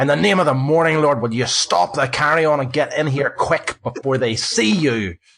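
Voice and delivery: full-throated, high bellow at top of voice. Voicing a man from the trees calling the players over: shouting at the top of his voice. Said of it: "shouts at the top of his voice".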